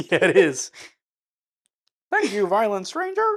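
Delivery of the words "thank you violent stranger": very high, loud, froggy puppet voice. Chatting about a movie, the speaker answers another speaker in the Kermit voice. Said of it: "It's the Kermit voice".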